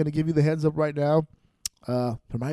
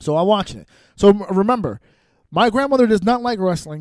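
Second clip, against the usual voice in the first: usual speaking voice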